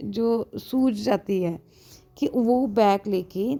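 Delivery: ordinary delivery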